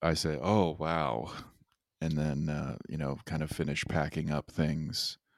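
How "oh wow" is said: put-on, acted-out relieved sigh. Recounting locking up the bike and putting it away, retelling a sigh of relief. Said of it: "sort of like a sigh of relief".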